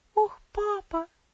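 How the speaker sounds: quavering, trembling, very high-pitched little cry. Elsie answers her father, holding his hand: quiet trembling murmur. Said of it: "пробормотала она тихим, дрожащим голосом".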